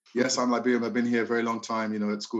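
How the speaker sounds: usual speaking voice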